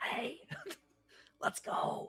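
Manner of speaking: loud, breathy, carrying stage whisper. Voicing a character calling out to another player: loud whisper. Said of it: "like, a loud whisper".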